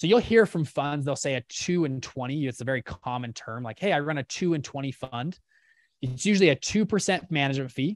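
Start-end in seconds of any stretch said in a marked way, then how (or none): none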